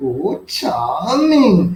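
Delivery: sweetly cooing, very feminine voice. Retelling what a woman said, quoting her in a very feminine voice. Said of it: "like in a very feminine voice".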